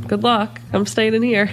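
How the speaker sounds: ordinary delivery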